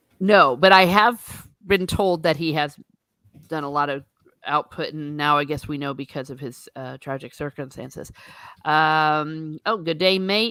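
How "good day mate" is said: bad attempt at Australian accent. Attempting a greeting, then admitting the accent doesn't work: failed Australian accent. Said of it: "I can't say it like an Australian".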